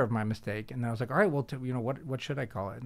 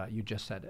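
mock-deadpan delivery, much quieter; 2 semitones lower, 9 dB quieter than usual. Retelling how a man answered the speaker's question about healthcare, retelling a deadpan reply. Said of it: "he paused and he deadpanned and he goes".

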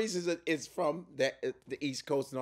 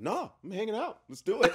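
put-on flat, unexcited voice with no enthusiasm; 6 semitones higher than usual. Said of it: "there's no, like, excitement in his face".

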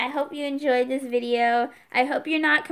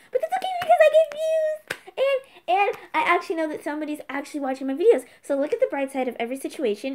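rattled-off, rapid-fire, really fast talking; 3 semitones higher than usual. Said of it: "I'm talking really fast".

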